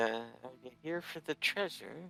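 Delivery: hushed, half-whispered, barely audible. Describing a scene, voicing a dwarf who comes up to the listeners, half-whispering.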